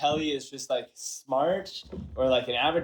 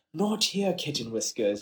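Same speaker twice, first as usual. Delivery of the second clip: fake upper-class British accent; 3 dB quieter than usual. Showing a voice for a character, asked to do it live: posh british accent. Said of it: "that posh British accent".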